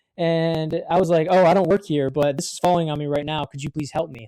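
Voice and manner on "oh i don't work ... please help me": sincere, genuine, earnest tone. Retelling asking a man for help with a falling pallet, retelling a sincere plea. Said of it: "And I like said it really genuinely".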